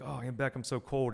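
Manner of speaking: put-on shivering voice. Retelling complaining to an aunt about the cold: imitating own shivering voice. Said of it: "I was shivering".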